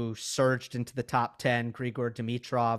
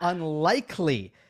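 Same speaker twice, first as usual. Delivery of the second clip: unlikely leaned on hard with heavy stress; 5 semitones higher, 4 dB louder than usual. Showing how a pilot's safety announcement sounds: stress on UNLIKELY. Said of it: "you should not put too much emphasis on the word unlikely".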